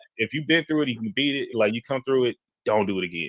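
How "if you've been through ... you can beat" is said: ordinary delivery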